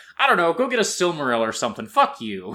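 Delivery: mock pissed-off, irritated, dismissive throwaway tone. Retelling a king's dismissive answer to a suitor: imitating a pissed-off Thingol. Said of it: "being kinda pissed off".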